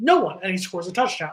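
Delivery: normal talking voice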